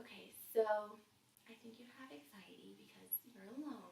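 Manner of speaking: very soft, even-keeled, calm voice. Recounting a phone call, the speaker mimics the listener: imitating Renee's calm voice. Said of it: "with the calm Renee voice".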